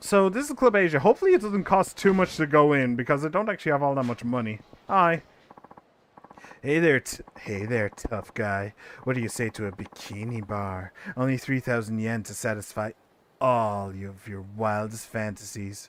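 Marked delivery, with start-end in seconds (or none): 6.6-15.9 very low, soft, alluring seductive voice. Voicing a club worker greeting the player character at the door: seductive voice. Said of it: "I don't know why I made him so seductive".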